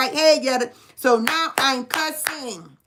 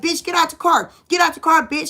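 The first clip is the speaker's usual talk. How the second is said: put-on yelling, higher pitch; 3 semitones higher, 3 dB louder than usual. Retelling yelling at a woman sitting in her car: retelling her own yelling. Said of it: "I'm steady yelling at her".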